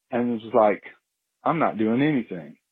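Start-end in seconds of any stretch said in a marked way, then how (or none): 1.4-2.4 mock casual, couldn't-care-less, unbothered bear voice. Retelling what a bear seemed to say: voicing a nonchalant bear. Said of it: "looked over at me very nonchalantly".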